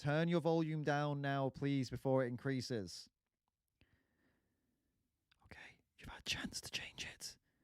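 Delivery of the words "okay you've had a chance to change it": hushed whisper, very quiet, barely there. Warning listeners to turn their volume down first, whispering. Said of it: "I'm whispering".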